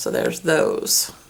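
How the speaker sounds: low, creaky voice that cracks.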